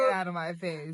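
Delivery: normal talking voice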